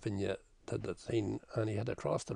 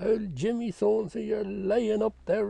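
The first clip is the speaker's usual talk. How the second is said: put-on drunken shout, higher and louder; 10 semitones higher, 8 dB louder than usual. Retelling how a drunk man shouted up at the graveyard: imitating a drunk man shouting. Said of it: "he'd stop and he'd look up and he'd shout".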